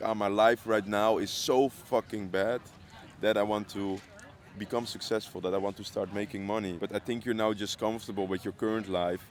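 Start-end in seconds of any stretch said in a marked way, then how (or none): none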